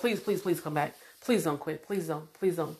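very soft, hushed, repeated begging. Retelling how a woman begged them not to quit, imitating someone pleading. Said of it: "She begged me".

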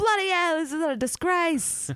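put-on Cockney accent. Speaker admits they can only do cockney: put-on cockney accent. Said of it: "I can only do Cockney".

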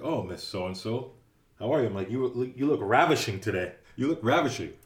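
ordinary delivery

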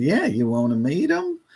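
put-on small, sweet Southern accent voice. Retelling what a woman asked him, in a sweet little Southern voice. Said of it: "She had a sweet little Southern voice".

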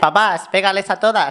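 high, mock ringside fight cheer.

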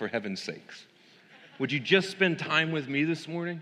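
mock, dry, teasing sarcasm, high-pitched. Retelling a request repeated by God: imitating God sarcastically. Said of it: "he's sarcastic with me, so he said".

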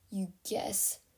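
low snorting. Echoing someone's unsure reply back at her; snorting, low. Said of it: "Fitz snorted".

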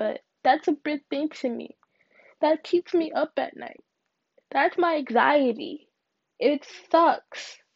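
crying through the words. Talking to viewers about a hard year and anxiety, crying. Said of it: "I'm crying a little bit".

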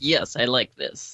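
slow, deliberate, drawn-out senatorial voice, approving. Imitating a senator approving a bill someone else wrote: Ted Cruz impression. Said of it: "That's my best Ted Cruz impersonation".

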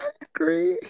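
timid, unsure, very high-pitched voice. Asked in a group for a yes or no, agreeing timidly. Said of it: "say it more confidently".

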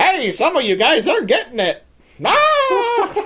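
very high, swooping ventriloquist-dummy squeak. Acting out a ventriloquist's little dummy delivering bad news: ventriloquist dummy voice. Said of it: "he's got a little dummy who's just like".

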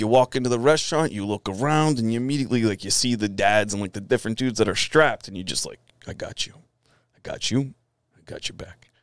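put-on New York accent. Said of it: "I'm gonna fuck his accent up".

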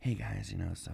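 very quiet, secretive, under-the-breath half-whisper. Retelling how a caller talked while at work: imitating Nervous Matt half-whispering. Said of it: "whispering because he was at work".

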